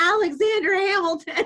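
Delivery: put-on very high, very loud, little toddler voice. Retelling his three-year-old answering what his name is, in a tiny little voice. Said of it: "this little tiny voice".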